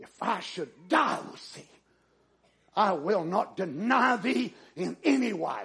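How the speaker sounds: mock-strained, vehement, on the verge of anger. Retelling a scripture scene, the speaker voices a man answering Jesus: acting out a strained, vehement reply. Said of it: "answers Jesus with a strained voice and maybe red in his face vehemently, right on the verge of anger".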